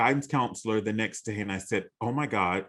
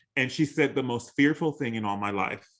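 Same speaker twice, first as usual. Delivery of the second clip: normal talking voice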